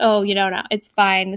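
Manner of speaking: ordinary talk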